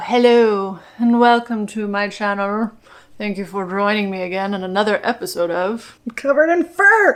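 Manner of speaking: sinister, evil villain voice. Welcoming viewers while holding a cat: evil villain voice. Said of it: "I'm like that evil villain who always has the cat".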